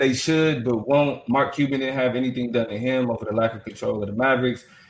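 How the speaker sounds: ordinary delivery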